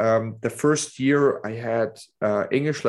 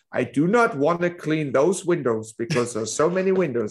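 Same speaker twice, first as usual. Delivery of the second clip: joke German accent, heavily laid on, put-on; 4 semitones higher than usual. Telling a joke about nationalities, voicing the german: imitating a german. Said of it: "the German guy comes".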